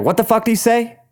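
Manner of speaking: high, sudden blurted words. Recounting an awkward moment with a sister, re-enacting a blurted-out question. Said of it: "I kind of blurted like".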